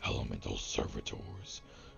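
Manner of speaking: whispered undead giant lady voice.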